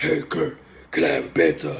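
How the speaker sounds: very deep, low, raspy, rumbling voice. Retelling how another guy always talked, in a deep raspy voice. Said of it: "real deep, raspy voice".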